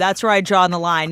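plain

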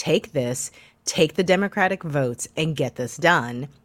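ordinary talk

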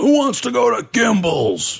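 play-acted, very high, swooping, explosive, booming shout. Recalling his father coming into the house, imitating a father's explosive outburst. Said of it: "he would explode like that".

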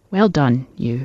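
softly spoken. A narrator reads a man bending down to the table he sanded: gently. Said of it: "saying gently to the wood".

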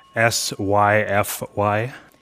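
ordinary talk

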